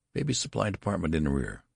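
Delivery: ordinary delivery, nothing marked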